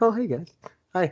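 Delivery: mild, gentle, high-pitched nice-guy manner. Show how this big dude from the promo pictures really greets people, imitating a soft-spoken man. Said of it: "He's very soft spoken".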